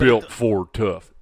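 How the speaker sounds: very deep booming announcer voice. Guessing who voices the Ford commercials: Sam Elliott voice. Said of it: "my Sam Elliott impression".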